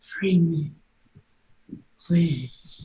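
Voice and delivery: ghostly, tortured, anguished stage whisper. Describing an object held to your ear, voicing a tortured soul whispering. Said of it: "a tortured soul as it whispers to you".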